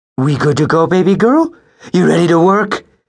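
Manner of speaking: very high, cooing voice. Narrator reads Pete speaking to his patrol partner Maggie, cooing. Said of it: "Pete cooed".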